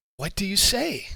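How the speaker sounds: creepy, high-pitched sea hag voice. Voicing a hag who offers the adventurers a deal: hag voice. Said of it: "this hag pops out of the room ... says".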